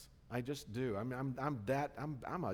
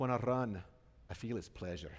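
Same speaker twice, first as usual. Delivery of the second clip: clumsy, bad put-on Scottish accent; 4 semitones lower than usual. Speaker quoting a famous line to the church, in a bad Scottish accent. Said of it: "I know it's a bad Scottish accent".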